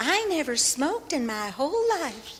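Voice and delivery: high, put-on Southern accent. Retelling a woman's answer when asked about the regulative principles, in a southern accent. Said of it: "I'm going to say it in a southern accent".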